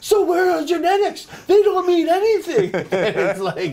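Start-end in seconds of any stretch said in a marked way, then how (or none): 0.0-2.7 imitated screaming in broken English, higher and louder. Retelling a coach arguing about genetics: imitating screaming in broken English. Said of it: "basically starts screaming at me".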